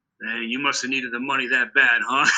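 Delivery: plain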